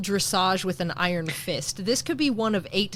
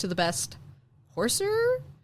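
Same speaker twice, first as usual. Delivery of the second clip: baffled, puzzled tone, pitch rising on "horser"; 8 semitones higher, 4 dB quieter than usual. Retelling how a signer repeated the dictated words: imitating his puzzled repeating intonation. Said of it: "the intonation with which he repeated it".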